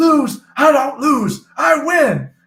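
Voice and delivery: slow, loud, high declaration, each word drawn out. Retelling losing at slots, quoting a film line: Keanu Reeves impression. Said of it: "I felt like Keanu Reeves in Devil's Advocate".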